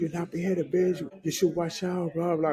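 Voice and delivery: mock heated, angry scolding outburst. Retelling what was yelled at a woman who almost ran over a kid, reenacting screaming. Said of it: "I'm screaming at her".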